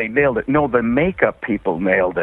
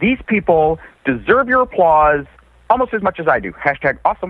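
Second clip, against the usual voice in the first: pitched-up, self-praising, tossed-off short phrases; 6 semitones higher than usual. Showing an impression being worked on: Robert Downey Junior impression. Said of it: "like Robert Downey Junior I've been working on".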